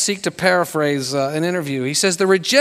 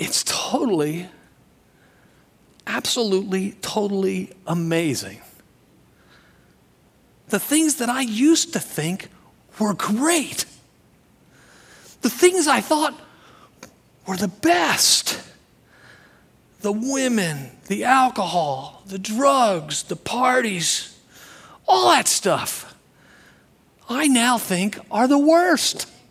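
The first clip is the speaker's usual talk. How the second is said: very slow, drawn-out, deliberate speech; 3 semitones higher, 4 dB quieter than usual. Paraphrasing what a friend often says about his old life, quoting a friend very slowly. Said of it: "always speaking very slowly".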